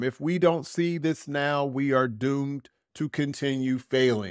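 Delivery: ordinary talk, nothing marked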